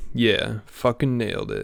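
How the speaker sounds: mock self-congratulating, soft, slow, swooping smug satisfaction. Mimicking a man pleased with himself while watching his video back, mock smug self-satisfaction. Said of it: "he's nodding his head like".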